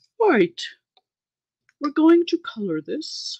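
put-on proper professional voice. Coloring a picture and joking about sounding professional: mock very professional voice. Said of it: "I could get my very professional voice going".

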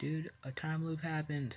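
somewhat quiet, soft, hushed delivery. Talking to the camera while filming, said somewhat quietly. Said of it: "I don't know why I said that somewhat quietly".

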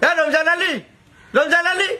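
high-pitched calling-out voice.

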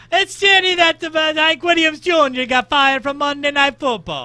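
put-on Italian accent, very high and very loud. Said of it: "Why are you Italian?".

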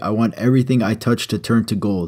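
ordinary talk, nothing marked

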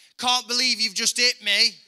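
very high, shrill, full-lung, top-of-lungs shout. Retelling what he shouted after being shoved, retelling a full-volume shout. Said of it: "at the top of his lungs, would shout".

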